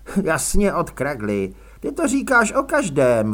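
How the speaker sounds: contemptuous. Grace replies to od kragly, contemptuous. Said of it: "odpověděl Grace pohrdavě".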